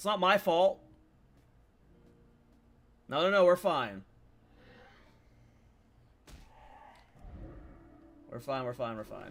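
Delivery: frantic, flustered, panicky babble. Playing a game while things go wrong, panicking. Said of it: "I'm panicking".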